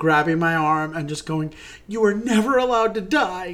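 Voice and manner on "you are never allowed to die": tearful, insistent, pitched-up teary voice. Retelling a partner's words at intermission: imitating a tearful plea. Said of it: "with tears in your eyes".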